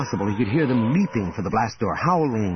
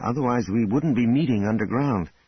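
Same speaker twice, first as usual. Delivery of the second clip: ordinary delivery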